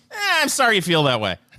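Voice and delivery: dismissive, uncaring tone with no empathy. Showing how someone without empathy says the line: dismissive, no empathy. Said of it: "You could say it like you. Go ahead".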